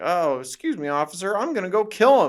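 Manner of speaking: very high, loud, belted puppet voice. Retelling a movie scene where Kermit talks to a cop: imitating Kermit. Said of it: "Kermit goes to the cop and he's like".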